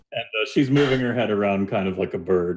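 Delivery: plain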